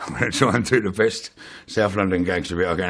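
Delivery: ordinary talk, nothing marked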